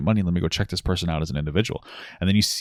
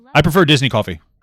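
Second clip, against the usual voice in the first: forceful, aggressive, very loud blurted outburst; 8 semitones higher, 9 dB louder than usual. Interrupting a story about Clara with a quick aside, said aggressively. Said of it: "I said that so aggressively".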